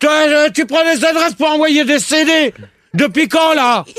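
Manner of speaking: furious yelling. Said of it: "Calme-toi, [name]".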